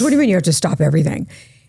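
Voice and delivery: mock panic-struck, alarmed, disbelieving tone. Retelling someone's reply to news of stopping everything: imitating a panicked voice. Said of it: "you could hear the panic in her voice".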